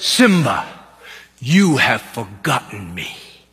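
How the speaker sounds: very low, big, deep voice. Retelling a film scene, the father speaking to Simba, in James Earl Jones big voice. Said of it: "James Earl Jones has a great voice".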